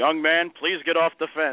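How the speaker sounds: loudspeaker announcer voice. Telling Pete how he got hooked as a kid: imitating Pete on the loudspeaker. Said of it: "the voice come across the loudspeaker and said".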